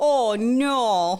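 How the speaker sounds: put-on Canadian accent with a stretched-out "no". Retelling what a child said at school pickup: Canadian-sounding accent imitating Lou. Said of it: "Like a Canadian?".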